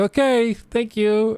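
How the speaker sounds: chipper, cheery, bubbly high-pitched voice. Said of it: "She's very bubbly on the phone".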